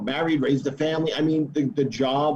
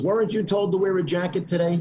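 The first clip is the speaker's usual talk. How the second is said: put-on tough New York Brooklyn accent; 4 semitones higher than usual. Retelling a detective questioning a man in a lineup, in a brooklyn accent. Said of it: "he had a Brooklyn accent".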